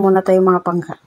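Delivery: ordinary talk, nothing marked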